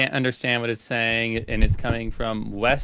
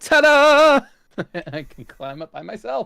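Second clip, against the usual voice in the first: very high, loud, proud triumphant ta-da; 11 semitones higher, 8 dB louder than usual. Voicing a character who climbs up hiding her fear: triumphant. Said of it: "stand up triumphantly".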